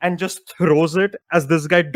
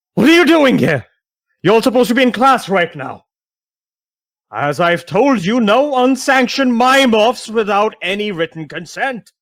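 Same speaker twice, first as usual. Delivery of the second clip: loud, raised, room-filling yelling voice; 4 semitones higher, 5 dB louder than usual. Narrating a scene, the speaker voices an older half-elf man yelling at a group. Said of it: "walks out just yelling".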